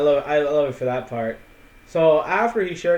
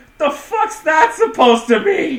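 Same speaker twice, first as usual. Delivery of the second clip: out-of-the-blue, shrill, very high scream; 7 dB louder than usual. Retelling a sudden outburst in a bar scene: imitating Merrick screaming. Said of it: "Merrick screams".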